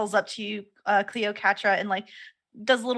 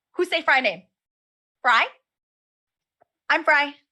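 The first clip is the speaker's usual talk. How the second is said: high-pitched bird voice; 6 semitones higher, 4 dB louder than usual. Voicing a bird who peeks up from garbage: Fry the bird voice. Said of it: "he peeks up with his head".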